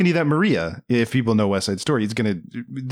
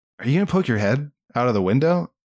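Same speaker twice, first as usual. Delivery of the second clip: put-on dry, deadpan voice. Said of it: "very tough and very dry and very no nonsense".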